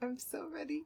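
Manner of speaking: choked-up, soft, high voice through tears. Reading a story aloud, expecting to cry again: crying while talking. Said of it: "You're crying already".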